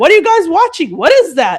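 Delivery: sergeant voice, sing-song with swooping pitch. Retelling a sergeant walking in on a movie: Billy Bob Thornton voice. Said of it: "he had, like, a Billy Bob Thornton voice".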